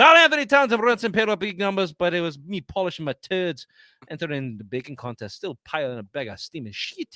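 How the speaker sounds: mumbled bad Scottish accent. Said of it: "That was more Irish than Scottish".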